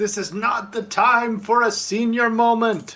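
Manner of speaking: drawn-out, top-of-the-lungs shout, pitched very high. Voicing a character failing to lift a grate: yelling at top of lungs. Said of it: "He kinda yells at the top of his lungs".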